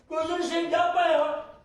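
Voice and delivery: angry, shouted outburst.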